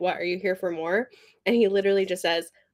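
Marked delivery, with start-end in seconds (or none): 0.0-1.1 mock cheeky, needling, challenging tone. Retelling how a character answers someone arriving: imitating a sassy retort. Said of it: "she's trying to sass him already".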